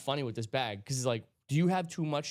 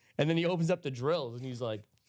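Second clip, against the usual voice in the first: usual speaking voice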